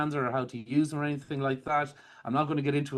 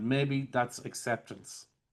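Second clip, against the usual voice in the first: falling inflection at the end on "acceptance"; 3 dB quieter than usual. Demonstrating an embedded command, downward inflection on acceptance. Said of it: "I'm doing a downward inflection".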